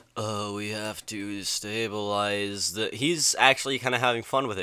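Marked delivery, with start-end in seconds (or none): 0.1-2.8 mock flat dull monotone delivery, quieter. Imitating the movie's other actors: imitating a dull monotone voice. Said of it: "talking in this dull, monotone voice".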